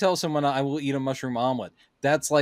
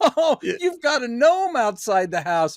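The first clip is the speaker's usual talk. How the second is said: put-on laughing speech, higher and louder; 11 semitones higher, 5 dB louder than usual. Retelling how a character keeps laughing on walking in: imitating someone laughing while talking. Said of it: "and he just keeps laughing".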